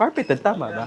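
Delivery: ordinary talk, nothing marked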